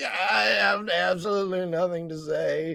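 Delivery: put-on dying-sounding voice. Act out a man who is saying nothing, imitating someone who sounds like he's dying. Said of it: "like I'm dying".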